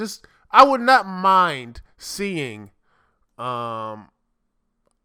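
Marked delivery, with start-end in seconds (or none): 0.0-2.7 slow, drawn-out stress on I. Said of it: "I would not mind seeing that type of stuff".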